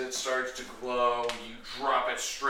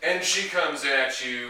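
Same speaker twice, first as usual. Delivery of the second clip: ordinary talk, nothing marked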